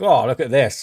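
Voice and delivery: ordinary talk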